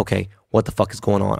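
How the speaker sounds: ordinary delivery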